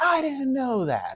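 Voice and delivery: acted-out, very high, drawn-out scream. Retelling a man at work screaming at them, the speaker is retelling screaming back. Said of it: "And I screamed right back at him".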